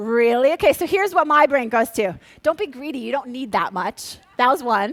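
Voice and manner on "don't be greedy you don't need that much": put-on Minnesotan-sounding accent. Voicing what their own brain tells them, in a Minnesota accent. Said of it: "that one had a Minnesota accent".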